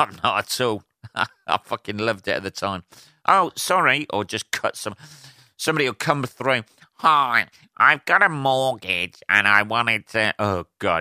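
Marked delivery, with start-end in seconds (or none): 6.9-10.3 slow, irritating, annoying voice. Mocking a caller on the line, imitating an annoying caller voice. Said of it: "You can't be doing your fucking voice".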